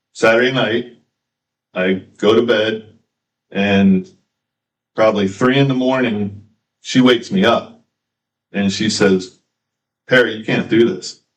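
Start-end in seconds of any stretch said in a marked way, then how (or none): 10.0-11.1 mock, tearful, frantic, hysterical crying voice. Recalling his mother waking him at 3 a.m., imitating hysterical crying. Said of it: "And she's hysterical".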